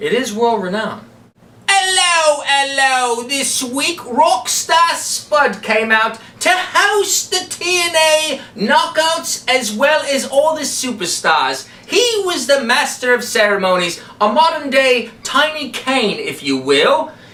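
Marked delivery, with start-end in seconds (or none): 1.7-17.1 slow, unhurried, put-on British accent. Asked by a fellow speaker to talk about a wrestler, using a british accent. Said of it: "do your world-renowned British accent".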